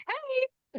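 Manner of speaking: very high-pitched little cartoon mouse voice. Retelling answering the phone at work: Mickey Mouse voice. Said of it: "I can hear your Mickey voice".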